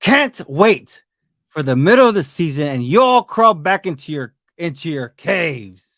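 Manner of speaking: very loud, deliberate, booming, drawn-out jeering. Reading out a commenter's message in his voice: imitating Tanner. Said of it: "I'm gonna do my best in, uh, impression".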